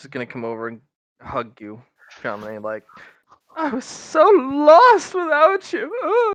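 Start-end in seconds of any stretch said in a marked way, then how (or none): 3.6-6.3 cackling laugh while speaking, higher and louder. Voicing Lady Lash hugging someone and attempting a joke: cackling while speaking. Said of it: "Lady Lash was cackling".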